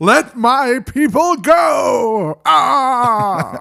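very high, booming, stretched out, ending on long "ah". Doing a Charlton Heston impression of a famous movie line. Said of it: "That's my best Charlton Heston".

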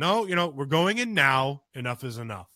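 stern yelling. Retelling yelling at a defiant little girl to go inside: retelling a stern yell. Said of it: "I had to get stern and I yelled at her".

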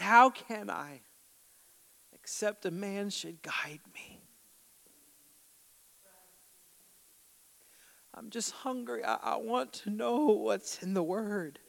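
half-exasperated, almost frustrated tone. Retelling a man's answer to a stranger who asks about his reading, imitating near-frustration. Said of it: "in almost frustration".

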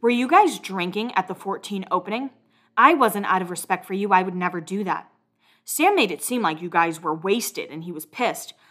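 ordinary talk

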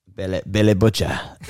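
put-on Australian accent drifting into British. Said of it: "It's more British, but it's not bad".

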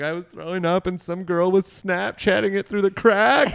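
high, tearful crying voice, acted out. Retelling what a crying friend said after throwing up: imitating someone crying. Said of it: "she comes out of the bathroom crying worse".

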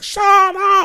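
very high, loud, shrill shout. Complaining about the neighbour's barking dogs, the speaker imitates a woman yelling. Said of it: "She's like".

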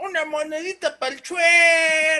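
put-on shout. Retelling what a man in a video yells: imitating a yell. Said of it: "les grita".

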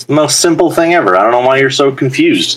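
teasing, sarcastic delivery. Explaining the Bless spell to a confused player in a tabletop game: sarcastic. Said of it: "she's being sarcastic".

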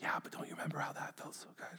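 soft, tempting whisper.

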